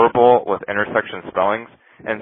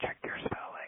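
barely voiced, hushed whisper. Retelling the captain leaning in with a hint: imitating a whisper. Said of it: "he just whispers in my ear".

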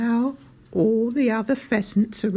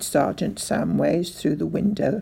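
ordinary delivery, nothing marked

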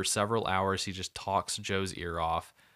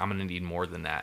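ordinary talk

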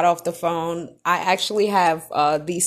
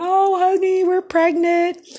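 put-on, very high, weepy, tearful crying voice; 12 semitones higher than usual. Retelling a video call showing the pregnancy test to her husband: imitating own past crying.

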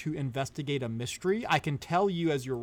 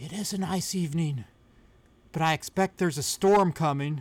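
rasping, scratchy, raspy delivery. A game master voices an unseen speaker answering a greeting, in a raspy voice. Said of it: "you hear a sort of raspy voice say".

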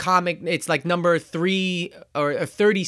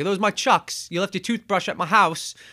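rough put-on British accent. Retelling a film scene, quoting the character Hobie Brown: British accent as Hobie Brown. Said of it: "my British accent doesn't do him justice".

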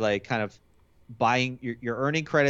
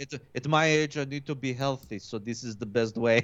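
slow, halting broken English. Retelling a Theragun commercial, imitating Cristiano Ronaldo in bad English. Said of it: "He's like".

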